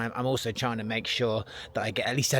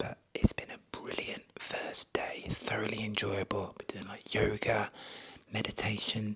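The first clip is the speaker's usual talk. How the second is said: hushed, quiet whisper; 2 semitones lower, 7 dB quieter than usual. Speaker at a retreat after the first full day, whispering since walls are thin. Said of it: "the reason I'm whispering".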